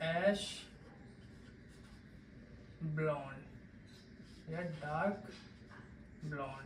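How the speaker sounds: slow, soft, careful, spaced-out delivery.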